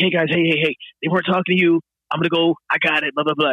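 easygoing, non-confrontational, calming, placating voice. Retelling how a ranger tried to smooth things over: imitating a placating ranger. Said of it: "non-confrontational dad ranger".

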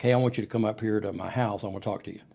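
ordinary delivery

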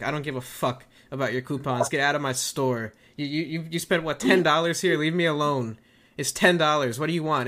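ordinary delivery

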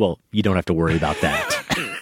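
flat deadpan delivery. Telling a story, the speaker quotes a woman's answer to a priest: retelling a deadpan reply. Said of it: "her just very deadpan response is".

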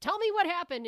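shrill, very high, loud yell. Speaker describes a movie where the brother yells at the main character, retelling a yell. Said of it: "the brother character is like yelling at him".

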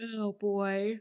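said through a yawn. Mid-conversation, said through a yawn. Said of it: "Why are you yawning?".

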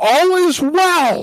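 very high-pitched, loud yelling. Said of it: "he's just standing there yelling".

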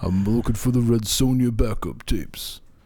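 put-on old Italian-American wiseguy voice. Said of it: "why is it every old Italian guy I do the [name] voice?".

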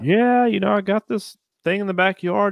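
polite gentleman's voice. Retelling how a caller described something in his backyard: imitating a soft-spoken gentleman. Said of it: "talking like a, a s-, a soft gentleman".

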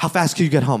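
mock-panicked voice. Retelling a friend's unexpected phone call in the middle of the workday, imitating a panicked voice. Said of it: "there's panic in his voice".

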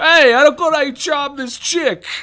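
put-on booming, high-pitched, heavy New York accent, belted out. Imagining how a film scene could have gone, Hank Azaria's heavy New York accent. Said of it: "his heavy New York accent".

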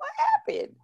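mock panicked, very high, laughing squeal.

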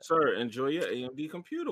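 put-on condescending, patronizing politeness. Speaker imitates talking down to someone in a dismissive, patronizing way while ending an argument about computers; mock condescending. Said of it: "You're being condescending".

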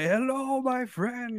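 very high-pitched voice. Imagining Hondo greeting Ahsoka in a cantina: Hondo impression. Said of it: "they go into a cantina and he's like".

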